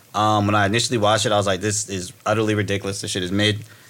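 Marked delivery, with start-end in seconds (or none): none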